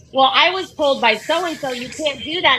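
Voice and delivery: ordinary talk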